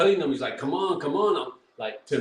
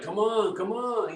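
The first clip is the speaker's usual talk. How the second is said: high-pitched screaming in a taunting tone; 7 semitones higher than usual. Commentating a fight, the speaker mimics a fighter screaming at his opponent. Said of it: "He's screaming at him like".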